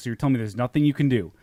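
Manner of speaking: angry voice. Retelling a call with a customer service agent: imitating own angry tone. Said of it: "And I started getting pissed".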